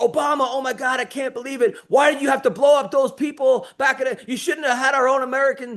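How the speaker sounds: put-on agitated, accusing rant, yelling. Recounting a man in a trance who yelled at them, imitating his yelling. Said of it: "He starts yelling at me because he's like".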